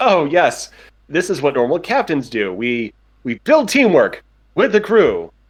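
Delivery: awkward put-on officer voice. Voicing a captain trying to seem relaxed: awkward captain voice. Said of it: "completely awkward about this entire situation".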